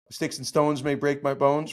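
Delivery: ordinary talk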